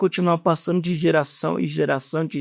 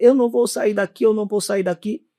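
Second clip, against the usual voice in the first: higher-pitched mock demon scream; 5 semitones higher than usual. Retelling how a demon in a woman screamed: imitating a demon screaming. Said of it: "começou a gritar, dizendo".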